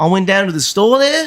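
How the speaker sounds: put-on Australian accent. Attempting an Australian accent after saying he can't: put-on Australian accent. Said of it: "there you go".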